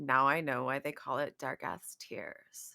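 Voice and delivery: low, flat, dry, expressionless deadpan. A tabletop player speaks as her character Ridiel, reacting to events; deadpan. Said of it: "she's mostly deadpan and she says".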